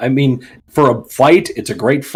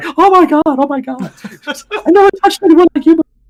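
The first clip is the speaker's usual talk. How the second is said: very high, loud, tearful blubbering wail; 5 dB louder than usual. Retelling how a lady fell over The Rock: imitating someone crying. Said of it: "and she's crying, like".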